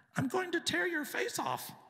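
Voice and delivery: very high, loud, creepy possessed horror-doll voice. Speaker imitates a voice heard over the television at home, horror-flick living-doll voice. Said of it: "It sounded like one of these dolls that come to life in a horror flick".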